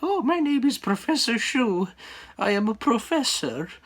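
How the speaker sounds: shrill, very high-pitched voice. Retelling a video of someone voicing his drawn-on shoe, shrill Professor Shu voice. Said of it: "him doing this shrill voice".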